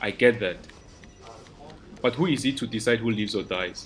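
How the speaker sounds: usual speaking voice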